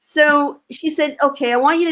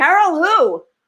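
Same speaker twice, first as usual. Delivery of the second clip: loud and much higher; 5 semitones higher than usual. Retelling their reply when told someone was on the phone, retelling a loud question. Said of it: "I said it really loud".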